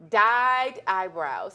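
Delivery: slow, careful, deliberately enunciated word by word. Presenting today's trends, naming the first one, said slowly. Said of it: "I had to say that slow".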